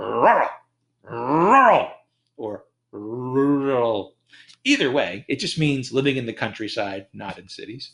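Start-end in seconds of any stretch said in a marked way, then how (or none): 0.0-4.1 put-on very slow, drawn-out drunk-man rural voice, like angry dog. Complaining about the word rural, saying it like an angry dog or drunk man. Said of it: "sounding like an angry dog or a drunk man".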